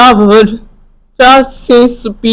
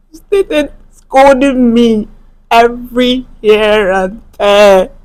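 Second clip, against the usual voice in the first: tearful, weeping speech. Telling a listener about being scolded by the boss, crying while talking. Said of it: "Stop crying".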